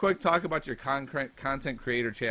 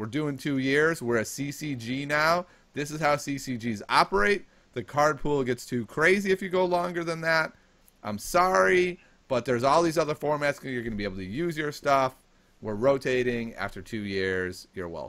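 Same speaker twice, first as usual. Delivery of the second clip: ordinary talk, nothing marked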